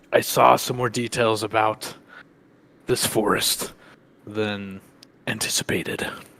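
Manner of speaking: whispering in character voice. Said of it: "I'm gonna lean over and whisper".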